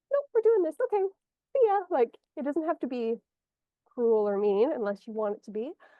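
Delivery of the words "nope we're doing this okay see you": put-on high, loud, dismissive little kid voice. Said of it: "like a little kid".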